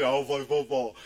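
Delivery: very deep put-on voice. Imitating a brother who always came in about football: very deep put-on voice. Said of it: "he had this real deep voice".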